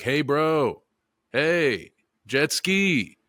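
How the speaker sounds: very slow, high, stretched-out holler. Retelling how Mel called out to people on a jet ski: imitating Mel yelling. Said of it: "if a dude is yelling at you".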